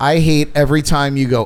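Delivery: normal talking voice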